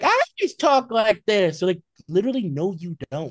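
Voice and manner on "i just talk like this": loud, swooping, sing-song put-on Boston accent. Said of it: "And she's like".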